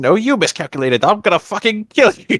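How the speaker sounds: high, play-acted, full-blown furious tantrum. Retelling Azula's outburst at Mei: imitating Azula throwing a fit. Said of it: "Azula throws a massive bitch fit".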